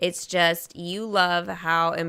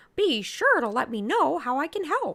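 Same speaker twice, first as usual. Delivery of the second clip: mock high-pitched cartoon mouse voice; 9 semitones higher than usual. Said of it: "my Mickey impression".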